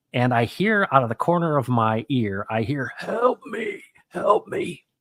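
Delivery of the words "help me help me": very high, strained, slow, labored voice. Retelling hearing a guy call out while running on campus, imitating a labored voice. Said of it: "his really, really labored voice".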